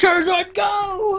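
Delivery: shrill, very high, loud scream. Imagining a kid in Walmart holding up a phone: imitating a kid screaming. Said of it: "just screaming, like".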